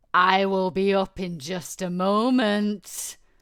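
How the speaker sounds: very loud, slow, menacing and sinister booming voice. Voicing a voice the two players hear coming from downstairs, booming and sinister. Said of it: "almost booming voice that's got a very sinister tone".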